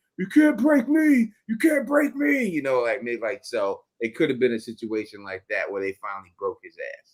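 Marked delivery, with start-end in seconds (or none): 0.2-2.5 shrill, very high screaming. Retelling a scene where Boyd screams at the end: imitating Boyd screaming.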